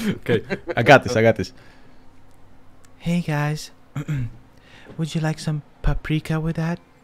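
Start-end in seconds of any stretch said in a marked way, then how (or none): 3.0-6.8 put-on female voice. Trying it for the first time ever, put-on female voice. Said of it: "female voice activation".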